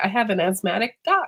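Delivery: ordinary delivery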